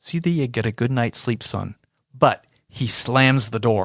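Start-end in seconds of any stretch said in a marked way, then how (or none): 0.0-1.7 quick, oh-so-gentle delivery. Quoting him right after he told Charlie off, in a mock-gentle tone. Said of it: "oh so gently".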